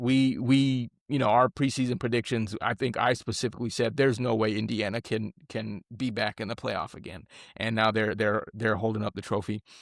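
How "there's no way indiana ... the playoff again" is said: ordinary talk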